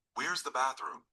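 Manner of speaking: normal talking voice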